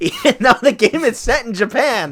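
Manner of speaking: high, loud, laughing through the words.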